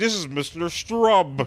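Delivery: put-on disguised voice, high-pitched and slow. Retelling a scene where a character disguises his voice on a phone call: imitating a disguised voice. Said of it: "makes his voice sound different".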